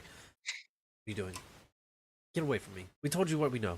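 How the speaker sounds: jittery, badly on-edge, really nervous voice. A guard reacts as someone kneels down close to him; nervous guard. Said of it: "He gets like really nervous".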